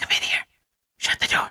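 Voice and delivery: breathy, barely voiced whisper. A mother retells her son at his bedroom door, imitating a whisper. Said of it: "And he's whispering".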